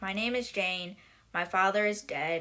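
usual speaking voice

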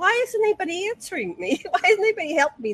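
play-acted, high-pitched screaming into empty space. Retelling being carried to the water by grays: retelling own screaming. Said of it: "I was screaming".

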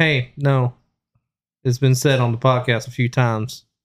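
ordinary delivery

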